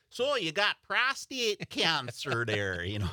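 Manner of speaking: put-on thick, strong Wisconsin accent with swooping pitch. Retelling what the doctor told the speaker, in the doctor's strong Wisconsin accent. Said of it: "he's got the strong Wisconsin accent".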